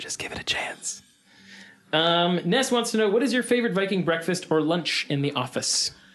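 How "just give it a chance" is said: creepy, much quieter. Asked whether he'll say it creepy like that, he shows it: really creepy. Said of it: "Will you say it really creepy like that?".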